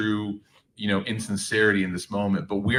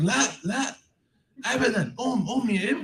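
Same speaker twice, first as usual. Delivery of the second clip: mock yelling, higher pitch. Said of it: "she starts yelling at me".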